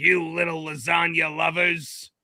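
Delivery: cartoon monster king voice. Riffing on lines from the Mario show, doing King Koopa: King Koopa impression. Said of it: "that's a really good King Koopa impression".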